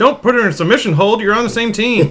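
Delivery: put-on old-timey 1920s newspaper reporter voice. Speaker interjects in a group conversation: 1920s newspaper reporter voice. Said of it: "Kind of sounded like a 1920s newspaper reporter there".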